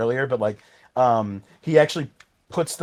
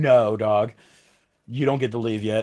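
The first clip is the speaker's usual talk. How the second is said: eldritch, otherworldly monster voice; 3 semitones lower than usual. Retelling a scene in which Cthulhu stops a departing character: imitating Cthulhu. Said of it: "we get fucking Cthulhu going".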